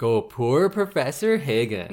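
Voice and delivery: ordinary talk, nothing marked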